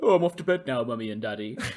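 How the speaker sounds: put-on animal voice. Retelling voicing the pet at home: put-on pet voice. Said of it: "we just do it all the time".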